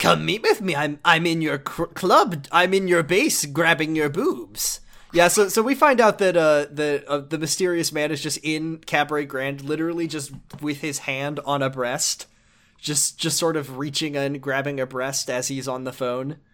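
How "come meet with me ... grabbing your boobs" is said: put-on taunting villain voice. Streamer voicing a mystery man taunting Majima over the phone, put-on nasty Joker voice. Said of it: "And the voice on the end of this phone is like a real nasty, like Joker voice. / And the voice on the end of this phone is like a real nasty, like Joker voice. He's like, / And the voice on the end of".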